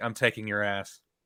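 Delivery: mock casual, unbothered, nonchalant delivery. Retelling a movie scene where he answers her: imitating a nonchalant reply. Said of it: "so nonchalantly".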